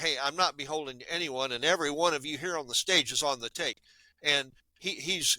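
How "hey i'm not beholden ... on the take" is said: normal talking voice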